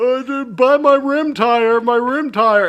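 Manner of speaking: very high, slow, drawn-out broken English. Retelling a mocking impression of a brother selling tires: imitating his broken English. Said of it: "I did an impression of him".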